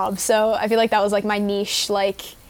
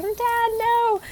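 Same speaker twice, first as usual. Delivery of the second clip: put-on very high, anguished, upset screaming; 14 semitones higher than usual. Recalling a movie scene of being dragged away from her dad, retelling a scream. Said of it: "I'm being dragged away from like my dad and I'm screaming".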